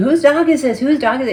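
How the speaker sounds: aggressive, loud, high-pitched angry yelling. Retelling yelling for the loose dog's owner: retelling a yell. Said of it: "I started yelling".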